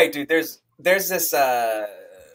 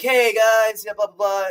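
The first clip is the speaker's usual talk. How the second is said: laid-back, easygoing, higher-pitched surfer-dude voice; 6 semitones higher than usual. A speaker retells their server greeting the table; imitating a surfer-dude voice. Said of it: "he spoke like a surfer".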